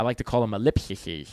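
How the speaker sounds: put-on lisp. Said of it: "I say it with a lisp".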